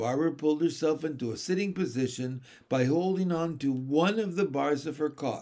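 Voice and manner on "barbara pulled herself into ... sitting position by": plain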